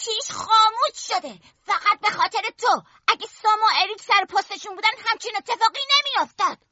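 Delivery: piercing, shrill, screechy high voice. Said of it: "با صدای جیغش گفت".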